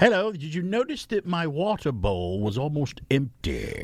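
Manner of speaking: sing-song, put-on British accent. Imagining a pet speaking to its owner about feeding time: British accent. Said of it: "like a British accent or something".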